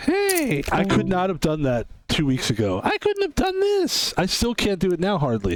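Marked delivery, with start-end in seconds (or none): 2.8-4.1 put-on cartoon voice, very high, slow and drawn-out. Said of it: "a cartoon voice right now".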